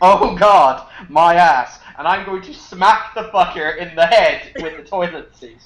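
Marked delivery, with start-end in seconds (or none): 0.0-1.8 loud, very drawn-out pained scream. Speaker describes walking back to where the trucker is screaming; imitating a trucker screaming. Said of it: "where the trucker is screaming".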